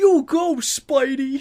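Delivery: very high put-on New York accent, cheering. Imagining a bystander cheering as the hero swings by: put-on New Yorker voice. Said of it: "someone puts that voice in".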